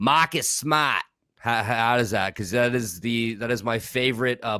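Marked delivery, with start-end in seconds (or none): 0.0-1.0 Boston accent, raised pitch. Asking listeners to rate an athlete's name said in a Boston accent. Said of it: "rate my my Boston accent real quick".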